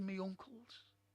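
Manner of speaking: ordinary delivery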